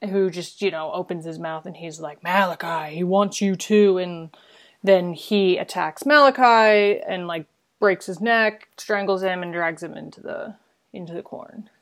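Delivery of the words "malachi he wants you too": put-on demonic zombie voice. Retelling the scene where zombified Isaac speaks to Malachi, demonic zombie Isaac voice. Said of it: "who's got a very different voice now".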